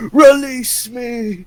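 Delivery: very high-pitched, loud shouted cry. Retelling a meme where people kneel and shout: shouting like Joseph Seed. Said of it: "do the whole Joseph Seed pose".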